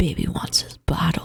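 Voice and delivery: soft, hushed whisper under the breath. Repeating how someone else said it, whisper the line. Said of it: "You like you like whispered it".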